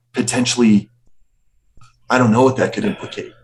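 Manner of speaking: speaking in a hush. Voicing a character who leads the players aside from onlookers, speaking in a hushed voice. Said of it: "leans into you guys with a hushed voice".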